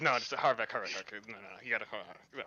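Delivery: barely audible, very quiet, low mutter under breath. Retelling how he reacted to harbeck's low performance, quiet muttering. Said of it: "I'm just like quietly like".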